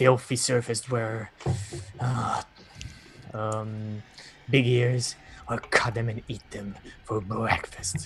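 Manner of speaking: growling creature voice, like a monster. Running a tabletop game, voicing a creature threatening a player: growling creature voice. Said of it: "he just growls at you".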